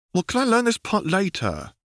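very high, sing-song, swooping whining plea. Narrator reads the Padawan during a card lesson, whining. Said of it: "Obi-Wan whines".

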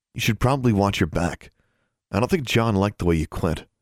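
ordinary delivery, nothing marked

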